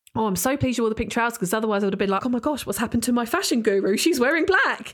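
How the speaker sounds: put-on joking tone. Speaker retells what a woman jokingly said to her afterwards, retelling a joking remark. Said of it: "she sort of jokingly said".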